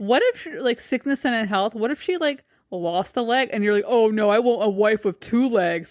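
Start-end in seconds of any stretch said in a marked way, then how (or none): 3.9-5.9 slow, drawn-out, callous voice. Mocking what the husband would say if his wife lost a leg: imitating Gareth. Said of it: "that's literally what he sounds like".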